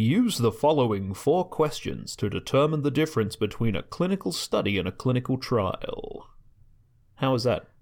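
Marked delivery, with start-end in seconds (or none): 0.0-6.3 radio announcer voice, broadcast-style reading. Reading a passage aloud to James, in a radio voice. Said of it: "Is that a good radio voice?".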